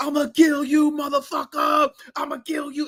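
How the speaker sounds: very high-pitched yell. Retelling a movie scene where Stallone is just yelling: imitating Stallone yelling. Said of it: "Stallone is just yelling".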